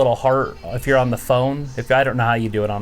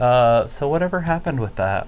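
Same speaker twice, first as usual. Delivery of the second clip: usual speaking voice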